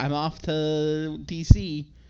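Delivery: slow, loud, breezy put-on voice. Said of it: "she's just like".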